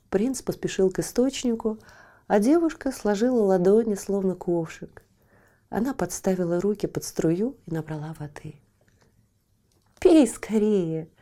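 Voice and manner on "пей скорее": glad, joyful shout with a laugh in it. A girl offers the prince water from her hands, joyful shout, laughing. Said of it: "крикнула она и радостно рассмеялась".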